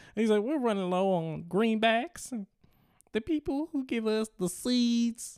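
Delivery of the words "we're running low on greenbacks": put-on Southern Louisiana drawl. Imitating how someone spoke when explaining a money shortage to colleagues. louisiana accent. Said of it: "up in a Louisiana accent".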